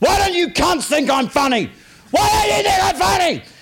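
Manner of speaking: very high-pitched screamed outburst. Recounting breaking down at their first gig, the speaker retells screaming at the audience. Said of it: "started screaming at the audience going".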